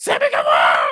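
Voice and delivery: very loud, belted fanboy announcing shout. Imitating how a promoter announces a wrestler: imitating Tony Khan announcing. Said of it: "that's literally how he talks".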